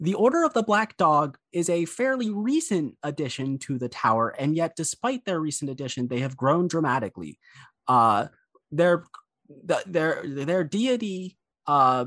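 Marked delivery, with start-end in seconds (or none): 0.0-7.4 professional, polished museum tour guide delivery. Voicing characters who act more professional, in an art museum tour guide manner. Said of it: "take on the demeanor of a like art museum tour guide".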